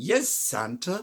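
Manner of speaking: put-on speech in a British accent. Quoting a favorite line from a horror film: little girl's British voice. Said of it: "that little girl's British voice".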